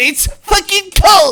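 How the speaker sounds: very high, loud, shrill scream. Retelling a drunk friend yelling about the open car window: imitating someone screaming. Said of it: "Macy's over here screaming".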